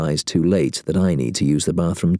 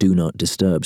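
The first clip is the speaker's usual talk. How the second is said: usual speaking voice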